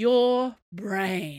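tired-sounding voice. Replying to a man who says he needs to work through something, weary voice. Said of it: "Porthos said in a weary voice".

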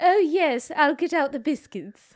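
exaggerated British accent. Explaining that period dramas want the accent the world thinks is British, in a stereotypical British accent. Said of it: "the one that talks a little bit like this".

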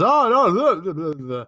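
loud, garbled, tumbling, babbling mumble. Retelling how a speaker at a summit mumbled: imitating someone mumbling. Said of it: "he then mumbles and he says".

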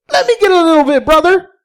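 very high-pitched cartoon character voice. Narrating a crude Mario parody, voicing Luigi as he arrives: Luigi impression. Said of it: "the best thing I got for a Luigi impression".

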